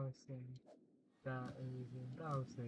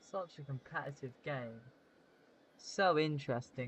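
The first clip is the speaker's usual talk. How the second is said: heavy, loud sarcasm with words dragged out; 5 dB louder than usual. Watching a slow game and commenting on it: sarcastic. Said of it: "I'm being sarcastic".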